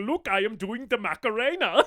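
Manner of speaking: put-on European dad voice. Describing a movie scene of a dad doing the Macarena: imitating a European dad. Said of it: "just this European dad being like".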